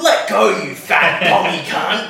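put-on aggressive old man voice. Retelling the old man's words while Cooper held him down: imitating an aggressive old man. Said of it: "he's just fucking really aggressive".

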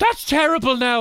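mock, very high-pitched screaming. Retelling an exchange about coffee prices, the speaker acts out screaming at him. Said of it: "I'm screaming at him and going".

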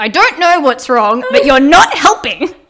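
very loud, forced out through clenched, gritted teeth. Speaker retells answering a man who asked what was wrong, retelling words through gritted teeth. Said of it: "said through gritted teeth".

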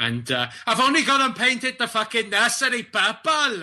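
put-on, attempted Welsh accent. Giving a shout-out to an expectant mother in an attempted Welsh accent. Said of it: "That's my attempt at a Welsh accent".

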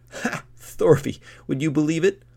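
very loud, high burst of laughter. Narrator reads Kettle's line to Thorvi, bursting out laughing. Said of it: "Kettle burst out laughing".

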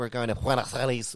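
mock Spanish pronunciation. Mocking a traveller who puts Spanish inflection on words: mocking someone's affected Spanish inflection. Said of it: "puts the Spanish inflection on a word".

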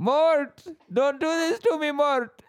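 very high-pitched, full cartoon voice. Speaker admits a past German accent slipped into another voice, doing Julien voice. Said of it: "like full Madagascar, like Julian".

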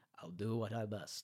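put-on very quiet, soft old-man voice. Challenged to do Obi-Wan, the speaker does an old Obi-Wan impression. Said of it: "I can only really do old Obi Wan".

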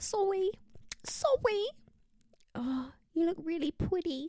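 put-on high babyish voice turning every r into w. Imagining a boyfriend who says his R's as W's: baby voice saying R's as W's. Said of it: "the R's as W's, so, like".

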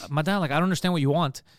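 ordinary delivery

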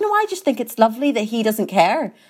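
put-on gentle Northern Irish accent. Retelling what a woman said to the speaker's mum, imitating a little Northern Irish accent. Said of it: "in a little Northern Irish way".

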